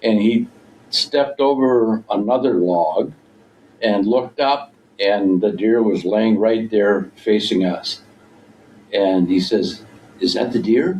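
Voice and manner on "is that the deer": tentative, cautious, wary, careful tone. Retelling how he asked on spotting the deer: imitating a quiet question.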